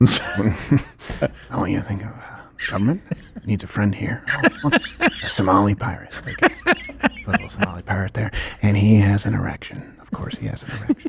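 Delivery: soft, breathy, whispered, gentle murmur. Someone asks whether you can do it as an impression, so you answer in a Bob Ross voice. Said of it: "can you do it in Bob Ross's voice?".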